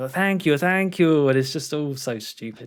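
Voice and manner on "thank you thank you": high, exaggerated, over-the-top gushing. Imitating a film character who sounds over the top: imitating an over-the-top thank you. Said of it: "so over the top".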